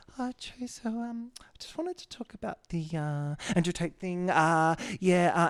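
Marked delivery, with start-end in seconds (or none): 0.1-4.2 halting, tentative, higher-pitched put-on voice. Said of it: "she brings it up in this way where she's like".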